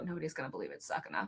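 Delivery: very quiet, hushed, mumbled mutter under the breath. Narrator voicing people as the players leave, muttering under breath. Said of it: "you can hear them under their breath go".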